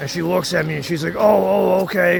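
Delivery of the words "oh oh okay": snide, sarcastic tone. Retelling a driver's reply after being warned about her bumper: imitating someone being sarcastic. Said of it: "she's being sarcastic with me".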